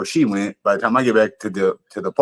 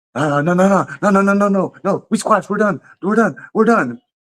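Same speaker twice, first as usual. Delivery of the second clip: put-on stuttering voice, higher pitch; 10 semitones higher, 3 dB louder than usual. Retelling how a man started stuttering when confronted: imitating someone stuttering. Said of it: "he's stuttering like a son of a bitch".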